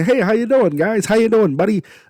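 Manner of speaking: very high farmer voice. Describing how a wrestler's real voice ruined his gimmick: high Brock Lesnar impression. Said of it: "his voice up here and super high".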